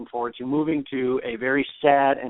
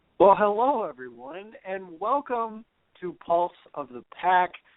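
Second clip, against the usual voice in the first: cheerful, happy, upbeat host voice, pitched up; 7 semitones higher than usual. A host welcoming listeners to the show after a good week, in a happy tone. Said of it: "In case you can't tell by my tone of voice".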